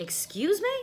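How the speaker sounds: indignant, affronted, high-pitched and offended. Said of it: "That's not the same thing".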